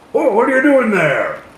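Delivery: yelling out. Voicing a big bearded man who sees travellers: hollering. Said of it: "he hollers out".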